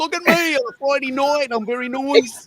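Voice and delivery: Australian Melbourne accent, pitched very high. Showing off an accent with a Friday night line: Melbourne accent. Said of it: "that's the Melbourne accent".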